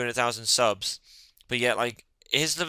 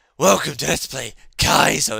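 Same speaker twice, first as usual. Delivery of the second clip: raspy put-on voice, higher, louder, slower; 3 semitones higher, 8 dB louder than usual. Describing a YouTuber's Kaizo Let's Play intro, Saron Lionheart raspy voice. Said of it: "he's got this like proper raspy voice".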